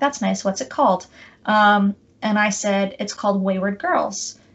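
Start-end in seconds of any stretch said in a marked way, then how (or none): 0.0-1.1 mock polite interest, faster. Retelling what a man said on hearing you wrote a novel, with mock polite interest. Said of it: "very much with polite interest".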